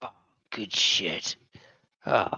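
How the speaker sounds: whispered, slow, breathy, drawn-out exhale. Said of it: "imitate Fabio smoking a cigarette".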